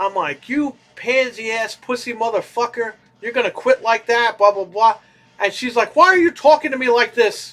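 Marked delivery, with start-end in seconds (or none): 0.5-5.0 mock screaming, much higher. Retelling yelling at a video while watching TV, retelling own screaming at TV. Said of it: "I'm screaming at the T V".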